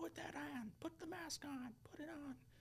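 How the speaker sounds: acted-out, very high, drawn-out scream. Retelling a man at an airport demanding a mask be put on: imitating someone screaming. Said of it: "screaming at me in the airport".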